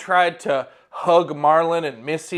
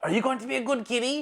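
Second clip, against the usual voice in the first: soft, high-pitched, gentle coaxing voice; 7 semitones higher, 7 dB quieter than usual. As Brick in a tabletop game, facing the Displacer Beast: coaxing it like a pet. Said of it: "looks at the Displacer Beast and just says".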